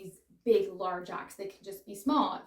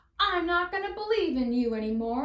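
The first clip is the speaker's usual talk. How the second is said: clumsy put-on Southern accent, pitched high; 8 semitones higher, 4 dB louder than usual. Giving an example of saying no, the speaker slips into a bad southern accent. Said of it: "I don't know why I have this like like southern accent coming out right now".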